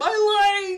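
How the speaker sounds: very high, very loud cartoon holler, "my" stretched. Retelling a scene from SpongeBob: imitating the yelling SpongeBob fish. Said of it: "that one fish that's yelling".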